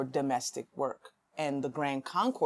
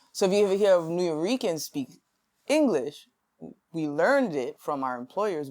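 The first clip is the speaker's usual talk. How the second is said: usual speaking voice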